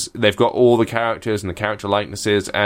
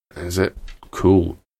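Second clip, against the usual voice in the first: downbeat, sad-sounding; 3 semitones lower than usual. Told a game is voiced by Adventure Time characters, replying sounding sad. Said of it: "that sounded well sad".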